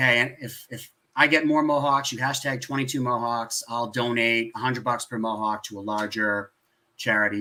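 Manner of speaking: plain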